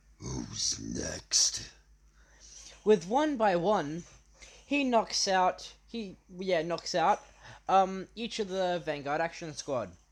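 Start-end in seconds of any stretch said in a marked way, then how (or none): 0.2-1.6 very low, rasping, rough demon voice. Telling a fan story where a character speaks: deep demonic voice. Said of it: "in a deep demonic voice saying".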